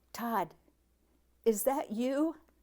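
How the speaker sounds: small, trembling, shaky little voice. Reading a story aloud, voicing the character who finds the scared boy: shaky little voice. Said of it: "a shaky little voice asked".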